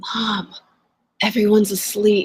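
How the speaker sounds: put-on child voice, whispering. Retelling what a child said in the car: imitating a child whispering. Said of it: "whispers to me".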